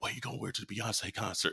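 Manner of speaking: put-on whisper. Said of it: "she's whispering like this".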